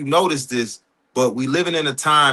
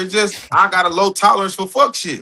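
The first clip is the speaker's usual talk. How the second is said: ordinary talk, nothing marked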